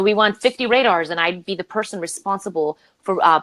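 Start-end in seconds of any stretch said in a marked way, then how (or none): none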